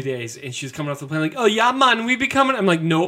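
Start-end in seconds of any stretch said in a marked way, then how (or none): 1.4-2.6 put-on accent from the Bahamas. Speaker imitates a friend back from a Bahamas missions trip, doing her Bahamian accent. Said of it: "She picked up the accent".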